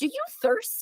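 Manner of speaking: very high-pitched character voice. Quoting a character's delivery from an episode: imitating Dolores's delivery.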